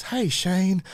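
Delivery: put-on high-pitched Tennessee Southern accent. Quoting a card from a former guest, the speaker tries Aaron Walker's voice. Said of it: "It's that Tennessee, like Southern".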